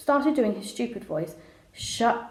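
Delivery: plain reading voice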